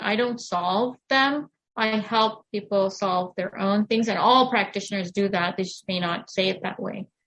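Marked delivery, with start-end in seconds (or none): 0.0-1.5 "don't" stressed and said slowly. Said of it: "I'm stress the word".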